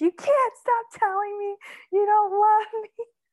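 shrill, very high, loud screamed outburst. Speaker retells screaming at a boyfriend from the toilet during a fight, re-enacting a scream. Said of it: "sat on the toilet and screamed".

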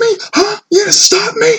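put-on very high, shrill, shrieking scream. Retelling a man who screamed at her for not letting him in; retelling a man screaming. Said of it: "the entire time he's screaming at me".

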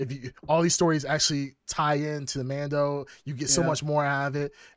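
normal talking voice

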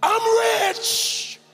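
put-on yelling voice. Retelling a grandmother in a family prayer circle: imitating grandmother yelling. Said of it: "my grandmother would just start yelling".

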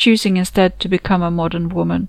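plain

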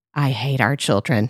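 acted muttered aside. Retelling a husband's remark at a family photo: imitating a mutter under the breath. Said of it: "under his breath".

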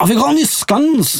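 imitated broad Scottish accent. Retelling what a man asked: imitating a broad Scottish accent. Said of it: "speaking in really broad Scottish".

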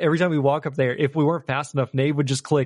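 ordinary delivery

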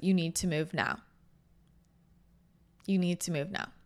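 put-on steady, calm, very strong, intense, firm urgency. Describing a visit from Archangel Michael, the speaker retells his calm, intense command. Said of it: "very calmly, very strongly, very intensely".

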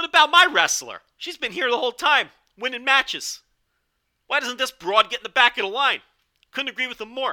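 loud, griping complaint. Recapping a wrestling show, voicing Gideon Grey's complaint: bad annoyed Gideon Grey impression. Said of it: "an annoyed East Coast guy".

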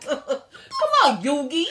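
put-on very loud, very high, swooping Brooklyn accent. The speaker mimics how Joey talks to Yugi, in Joey's Brooklyn accent. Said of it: "Brooklyn accent".

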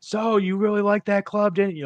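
mock oblivious shouting, very high-pitched. Acting out someone just out of a loud club, imitating someone yelling unawares. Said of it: "like you're yelling but you're not".

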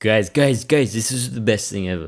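put-on slow, drawn-out, drunk-sounding voice. Speaker acts out someone who has just gotten drunk; mock-drunk voice. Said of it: "That was my drunk impression".

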